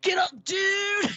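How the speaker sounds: put-on surfer yell, very high, stretched-out, bullhorn-like. Recounting a loved movie scene where a surfer wakes everyone: imitating a surfer yelling. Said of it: "he's like yelling in the bullhorn".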